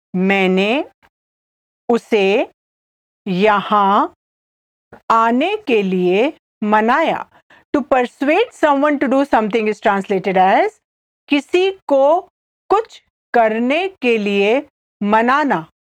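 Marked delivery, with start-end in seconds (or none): 0.1-7.3 slow, halting, broken into small chunks. Repeating a hindi translation again for the listener: slowly. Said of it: "I'll say it again slowly".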